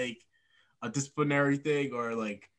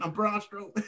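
put-on country accent, pitched higher; 8 semitones higher than usual. Imitating Braun Strowman talking with a country accent: Braun Strowman voice. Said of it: "country accent".

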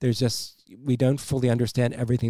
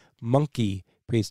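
normal talking voice

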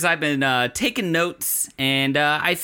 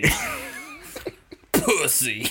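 very high pitch, strong stress on pu in pussy; 4 dB quieter than usual. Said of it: "slink your neck back and, like, literally add four chins to your throat and just go".

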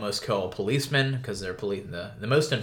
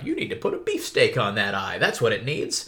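put-on animated Victorian-era British boy accent; 3 dB louder than usual. Describing a comical scene, voicing the butcher boy in a young Victorian British boy accent. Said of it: "That's my attempt at a uh, young British boy in the Victorian era".

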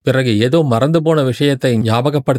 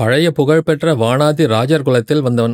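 ordinary delivery

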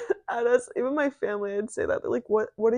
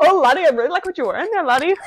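very loud, high-pitched put-on Irish accent; 5 semitones higher, 8 dB louder than usual. Asked about the irish accent, answering in an irish accent. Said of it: "What was the Irish accent?".

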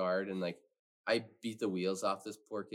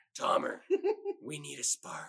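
pitched-up, raspy heavy smoker's voice; 5 semitones higher than usual. Speaker imitating a guy who would call on him, imitating a smoker's voice. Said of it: "He talked like he smoked for you".

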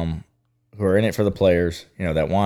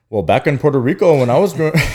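raised, high-pitched, spoken-up storytelling voice; 7 semitones higher, 6 dB louder than usual. Speaker retells a talk about weighted balls, in Carlos Ramirez impression. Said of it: "that's my best impression".

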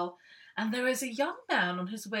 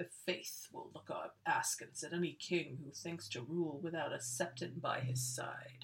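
soft, sinister delivery; 5 semitones lower, 8 dB quieter than usual. Guessing how Septon Matthias talks, the speaker does a Septon Matthias impression. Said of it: "I think he talks like this".

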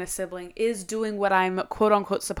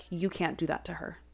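mock deadpan, much quieter; 3 semitones lower, 11 dB quieter than usual. Retelling what a woman said to the speaker while looking at her, imitating her deadpan. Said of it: "deadpan was like".

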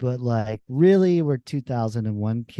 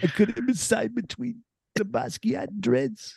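put-on New York voice, higher; 10 semitones higher, 3 dB quieter than usual. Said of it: "My impression".

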